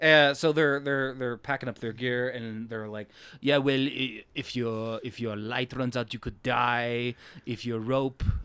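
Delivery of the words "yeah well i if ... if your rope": loosely done, rough approximation of a put-on voice. Quoting characters packing up their gear: sort of Arnold voice. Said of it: "and now I'm doing sort of Arnold".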